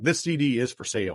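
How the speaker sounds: ordinary talk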